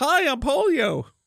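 very high-pitched cartoon character voice. Giving the disease polio a voice as a cartoon character: cartoon character voice. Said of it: "The polio sounds like a cartoon character".

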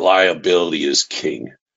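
gravelly voice, like gravel in the throat. Retelling Mike slamming his hand on the table; Mike's gravelly voice. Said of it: "he's gravelly voice".

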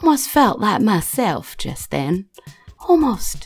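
half-mumbled, talking to herself. Voicing a character walking off into the wood: muttering to herself. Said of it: "muttering to herself and she's like".

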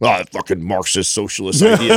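turned-off, dismissive grumble. Retelling how Sal reacted to an idea: imitating Sal grumbling. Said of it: "So he kinda grumbles".

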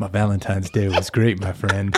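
cool, calm, smooth, low radio DJ delivery. Playing a pretend radio show with Hank, answering in a cool, calm, smooth voice. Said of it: "You just talk normal".

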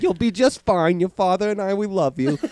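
put-on Long Island accent, laid on. Playing Jordan Eberle's parent talking to him, in a put-on Long Island accent. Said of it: "I gave him a Long Island accent".

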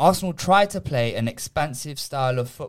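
sarcasm laid on as thick as possible, dripping. Arguing about a player with other speakers, heavy sarcasm. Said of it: "Said with as much sarcasm as you can take".

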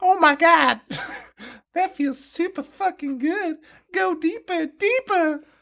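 pitched way up, cartoon style. Voicing Nurse Betty in a script reading: Harley Quinn voice. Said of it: "like, Harley Quinn's voice".

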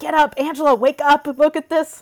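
frantic high screaming. Retelling waking her sleepy husband during the Mets game, retelling screaming at him. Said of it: "I start screaming at my husband".

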